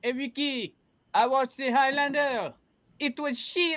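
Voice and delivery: very high, very loud, shrill character voice. Doing a Jean Girard impression about watching Highlander: Jean Girard impression. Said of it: "that was a pretty legit impression right there".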